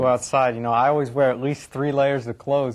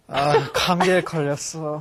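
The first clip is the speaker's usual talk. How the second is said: put-on sniffling, with sniffles; 3 semitones higher than usual. Answering a Korean practice question about having a cold, sniffling. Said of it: "I want sniffling from [name]".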